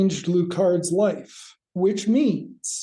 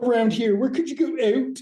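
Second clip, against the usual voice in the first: put-on Canadian accent, higher; 6 semitones higher than usual. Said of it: "in his Canadian accent".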